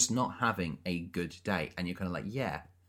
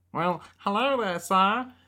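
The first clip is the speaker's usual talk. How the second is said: very high, loud, nerdy voice; 12 semitones higher, 7 dB louder than usual. Quoting Joey Richter's high school kiosk character in his high-pitched voice. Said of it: "he's got that high-pitched voice".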